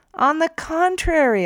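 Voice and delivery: very high, loud, booming voice. The narrator retorts to a man who spoke hesitantly, booming. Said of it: "I boomed".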